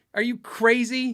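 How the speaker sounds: put-on loud, high, furious, incredulous tone. Recounting a call asking him to take down his video, retelling an angry retort. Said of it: "I was so mad".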